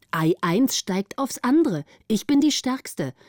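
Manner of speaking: ordinary talk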